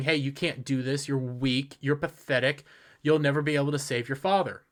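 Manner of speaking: normal talking voice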